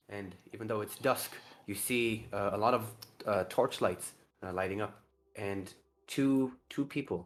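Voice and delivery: normal talking voice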